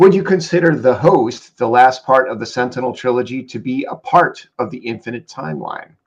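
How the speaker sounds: normal talking voice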